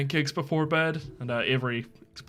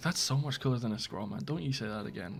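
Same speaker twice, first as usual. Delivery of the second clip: hushed half-whispered voice; 7 dB quieter than usual. Narrating a scene, voicing a man half-whispering to his friend. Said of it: "He just whispers to his friend".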